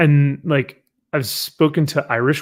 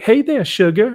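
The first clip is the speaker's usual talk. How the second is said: exaggerated cartoonish Southern belle accent, pitched up; 8 semitones higher, 3 dB louder than usual. Retelling how Rogue greets someone: Rogue's Southern belle accent. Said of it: "watched Rogue, and she's like".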